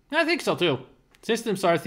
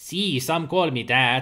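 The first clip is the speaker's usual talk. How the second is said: bad put-on Spanish accent; 3 semitones lower than usual. Voicing the Mexicali Kid when asked who he is, bad Spanish accent. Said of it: "my Spanish accent is awful".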